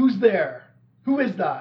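loud, high calling out. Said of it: "you hear one of them call out".

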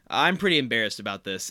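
flat deadpan delivery. Retelling a favorite funny moment from the show: deadpan Chang line. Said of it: "total deadpan".

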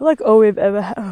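talking through a yawn. Talking to listeners, the speaker speaks while yawning. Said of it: "Sorry, I'm yawning".

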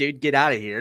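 put-on proud tone. Retelling a wrestler going back into character with a kid: imitating a proud uncle. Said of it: "like a proud, like, uncle".

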